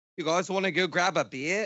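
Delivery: put-on Australian accent. Showing friends his attempt at an accent: Steve Irwin impression. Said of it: "that sounds pretty good".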